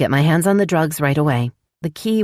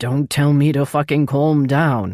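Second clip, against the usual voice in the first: growling, snarled through clenched teeth. Narrator reading Brent's reply after being told to calm down: growled through clenched teeth. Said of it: "Brent growled through clenched teeth".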